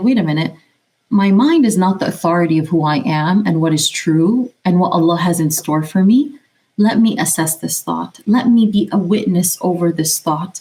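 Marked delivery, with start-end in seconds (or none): none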